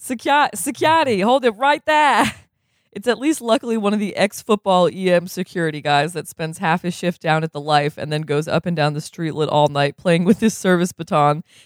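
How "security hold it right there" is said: high Boston-accented voice. Repeating a security guard's call: boston accent. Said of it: "Is that the Boston accent?".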